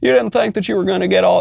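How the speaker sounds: high, creaky, raspy politician voice. Mocking a politician's statement in an impression: Obama impression. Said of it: "even my Obama's becoming a Bill Clinton".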